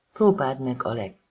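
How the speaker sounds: ordinary delivery, nothing marked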